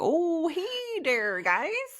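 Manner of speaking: put-on very twangy Canadian accent, drawn out, sing-song. Imitating the man in the barbecue videos greeting viewers: twangy canadian accent. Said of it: "twangy, I hate to say, like, very Canadian".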